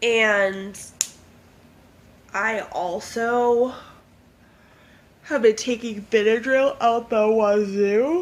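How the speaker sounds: speaking through a yawn. Talking about days of dealing with hives, yawning while talking. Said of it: "I'm yawning because".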